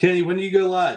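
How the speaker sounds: loud, high-pitched yelling. Speaker calls out to kenny, who is right there, yelling. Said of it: "I don't know why I'm yelling".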